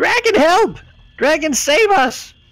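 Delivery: creature voice screaming. Voicing a kobold who sees the dragon: kobold screaming for help. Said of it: "one of them sees Valignith and just screams".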